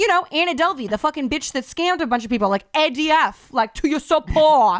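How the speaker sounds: play-acted, enraged, high-pitched screaming. Retelling an argument about a scammer, imitating herself screaming. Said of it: "And I started screaming at him".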